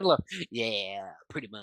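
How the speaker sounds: put-on strong Southern accent. Agreeing with a friend about Southern life, strong Southern accent. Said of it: "Said in the most Southern way possible".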